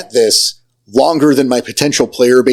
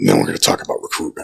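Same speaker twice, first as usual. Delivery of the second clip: whispered, hushed, breathy put-on character voice; 6 dB quieter than usual. Asked to redo the line, says it in Whiplash voice. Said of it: "Say it with Whiplash's voice now".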